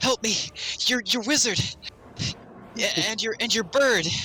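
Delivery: panicked, stumbling, high-pitched frantic pleading voice. Voicing a character who runs up begging for help: panicked voice. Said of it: "You see a panicked Arai running towards you".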